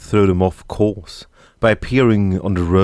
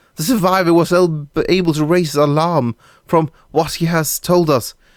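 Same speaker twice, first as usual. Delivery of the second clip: intimidated, cowed, shrinking-back voice, pitched a little up; 9 semitones higher than usual. Speaking under someone's withering gaze: cowed, shrinking. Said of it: "felt himself shrink under that withering gaze".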